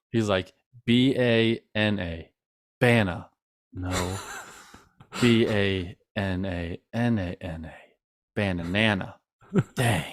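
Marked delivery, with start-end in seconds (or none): 5.1-10.1 acted whisper, much quieter. Describing someone's banana-spelling bit, acting out how he does it: whispering. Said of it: "He like whispers it".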